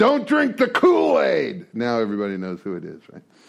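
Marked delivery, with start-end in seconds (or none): 0.0-1.7 high, slow heckling yell. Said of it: "the last thing he'd yell is".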